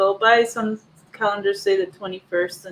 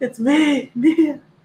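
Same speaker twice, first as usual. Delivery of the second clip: manly voice, pitched up; 6 semitones higher than usual. Reading out a message from mia: imitating mia in a manly voice. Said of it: "With the manly voice that she wanted".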